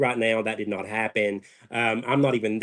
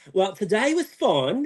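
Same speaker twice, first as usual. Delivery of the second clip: put-on British accent, pitched way up; 10 semitones higher than usual. Recalling a line blurted out during a confessional interview: put-on British accent. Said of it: "talk back to her in like a British accent".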